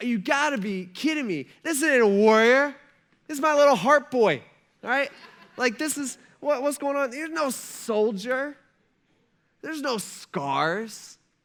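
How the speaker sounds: acted disappointed king voice. Retelling Saul's reaction on seeing him, imitating Saul's disappointment. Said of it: "the disappointment on Saul's face".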